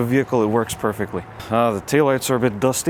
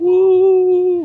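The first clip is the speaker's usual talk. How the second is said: very slow, sarcastic fake cheer; 7 dB louder than usual. Driving up a spiral parking garage they hate: sarcastic fake excitement. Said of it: "incredibly high levels of sarcasm".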